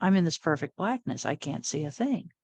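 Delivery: ordinary delivery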